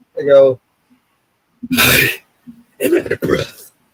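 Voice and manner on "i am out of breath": put-on gruff superhero voice, pitched higher. Showing another speaker an easy imitation of Batman: Batman voice. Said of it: "you want me to sound like the Dark Knight?".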